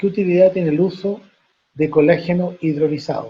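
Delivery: plain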